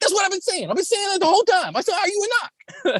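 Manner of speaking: put-on heavy, thick Boston accent, pitched very high. Retelling a funny movie scene, quoting a woman's reply, in a thick Boston accent. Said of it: "they have those thick Boston accents".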